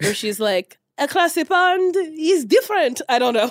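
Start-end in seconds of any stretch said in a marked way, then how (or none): 1.0-3.0 put-on, fake French accent, slow and high. Imitating a French woman someone is dating, in a put-on French accent. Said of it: "That was my French accent".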